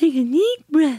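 voice pushed very high in pitch. Recalling coaching Amelita to breathe, echoing her: Amelita's super high-pitched voice. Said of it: "she had a super high-pitched voice".

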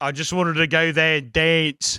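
poor Australian accent. Acting out a bit as a character, bad Australian accent. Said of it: "still in a Newark accent, but trying to do Australian".

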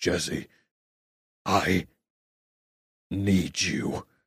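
very low, gruff, soft voice. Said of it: "a very low, gruff voice of being like".

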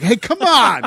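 high, loud, slow, friendly calling out. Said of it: "was just like".

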